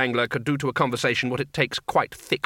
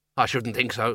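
plain reading voice

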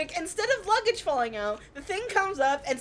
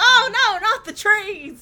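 very slow, high, loud, drawn-out screaming cry; 5 semitones higher, 5 dB louder than usual. Retelling a movie scene where Roman floats and twists in the air: imitating Roman screaming. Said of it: "And he's screaming".

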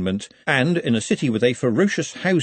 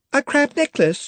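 very high, giggling, giggly voice. Juliet reacts as a crab comes up with three more clinging on, giggling. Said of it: "giggled Juliet".

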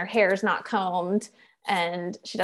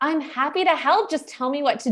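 put-on exasperated tone, higher pitch; 7 semitones higher than usual. Retelling what a neighbor husband said to his wife: imitating an exasperated husband. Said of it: "he was kind of exasperated".

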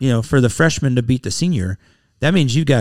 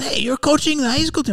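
weak, very high-pitched put-on Spanish accent; 13 semitones higher, 3 dB quieter than usual. Quoting a man he ran into, now a high school coach, in an attempted Spanish accent. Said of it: "I'm trying to do a Spanish accent".

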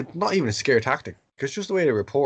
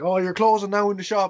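high, loud mock roar. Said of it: "she roared her head off".

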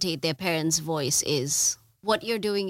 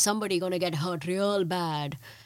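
heavy, laid-on, put-on Indian accent. Describing how people imitate their parents, the speaker demonstrates the Russell Peters voice. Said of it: "The Russell Peters voice is like".

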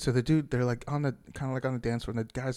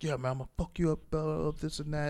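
mock chest-puffing tough-guy voice, higher; 4 semitones higher than usual. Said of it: "that little chest puffing before people start fighting".

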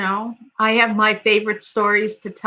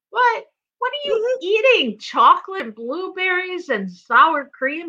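put-on Chicago-sounding accent; 9 semitones higher than usual.

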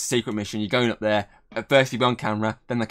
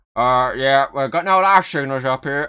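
put-on, raised astronaut radio chatter voice; 4 semitones higher, 6 dB louder than usual. Quoting a film scene of a moon landing: put-on astronaut radio voice. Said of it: "I don't know what I'm doing that voice for".

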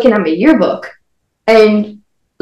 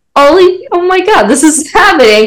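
high, giggling, bubbling-over excited voice; 7 semitones higher than usual. Retelling own words to a friend on the bus, retelling own giggly words. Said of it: "'cause I was giggling".

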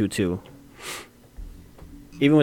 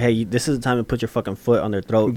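ordinary talk

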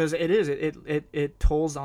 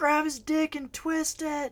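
very high, shrill screaming yell; 13 semitones higher than usual. Recalling watching a bout on TV, retelling screaming at the TV. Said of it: "I was literally screaming at the TV".

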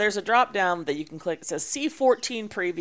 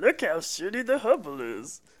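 goofy, cartoonish puppet-show voice. Mocking people who knock the Hubble next to the Webb, in a Muppet voice. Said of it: "I'm doing a Muppet voice".

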